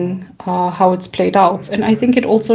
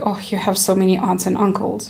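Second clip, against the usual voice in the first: put-on mocking tone; 4 dB quieter than usual. Retelling what someone once said about having many relatives: imitating a mocking remark. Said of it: "in a mocking way".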